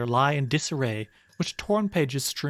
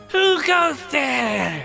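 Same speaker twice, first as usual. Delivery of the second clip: put-on scary ghost voice; 8 semitones higher, 4 dB louder than usual. Voicing a glowing creature that appears before the players: Spooky Wisp voice. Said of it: "and it says".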